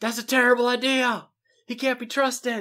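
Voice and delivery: mock very high, heated, crazed shouting. Retelling how the Northern Lords reacted to the idea: imitating lords shouting. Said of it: "shouting things like".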